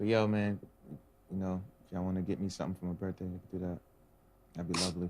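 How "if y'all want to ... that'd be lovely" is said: quick, fast, hushed half-whisper. Mid-conversation with co-hosts, a host addresses the audience, half-whispering. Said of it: "Why are you whispering?".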